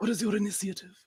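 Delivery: soft, high villain voice. During a D&D game, in a Voldemort voice. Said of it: "you're doing Voldemort".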